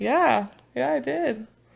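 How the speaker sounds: mock casual tone, high and breezy.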